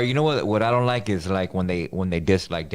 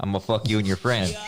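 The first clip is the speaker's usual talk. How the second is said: ordinary delivery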